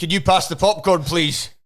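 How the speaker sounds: full voice carrying far. Retelling a latecomer in the cinema asking his wife something: imitating a loud outdoor voice. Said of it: "said it in, like, an outdoor voice".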